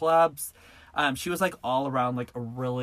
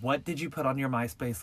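put-on furious voice. Retelling how the speaker's mom reacted to the myspace: imitating a furious mom. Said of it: "my mom is furious".

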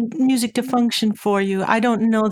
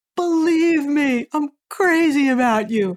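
grand, showy, big pitched-up delivery; 5 semitones higher than usual. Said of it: "they can practically shout it to you".

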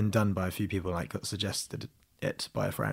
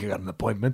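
put-on New York Italian man's accent. Retelling what the man who answers the bell said, New York Italian accent. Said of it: "that's the sort of New York Italian guy".

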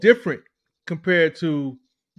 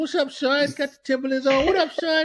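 put-on New York accent, pitched up higher; 10 semitones higher than usual. Clowning around with co-hosts, greeting someone: put-on new york accent. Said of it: "got the New York accent".

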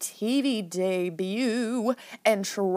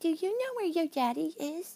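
put-on soft, quick baby talk; 7 semitones higher, 6 dB quieter than usual. Recapping a scene, quoting Ronnie speaking to the girls: Ronnie's baby voice. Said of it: "like in like this baby voice".

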